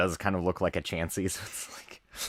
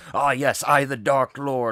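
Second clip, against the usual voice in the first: high, grand, boastful self-proclaiming villain voice; 5 semitones higher, 4 dB louder than usual. Retelling how an anime character asked for help: imitating a self-styled Dark Lord. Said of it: "he'd be like".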